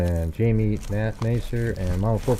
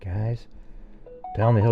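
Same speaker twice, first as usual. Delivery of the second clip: put-on hushed, lowered quiet voice; 3 semitones higher, 6 dB quieter than usual. Speaker mimics a man telling the group to go down the hill; imitating a lowered voice. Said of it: "he's got his voice really lowered".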